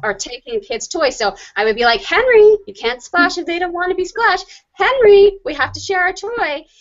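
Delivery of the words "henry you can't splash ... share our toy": voice climbing high, nearly screaming. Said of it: "my voice got higher and higher and higher and, and closer to screaming".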